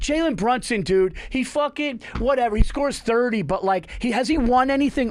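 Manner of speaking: dismissive ranting, high and loud. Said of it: "If somebody goes".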